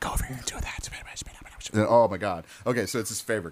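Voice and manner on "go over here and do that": mock, put-on whisper. Describing the voices in a game that feels uncomfortable: imitating whispering. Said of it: "there's that whispering, like".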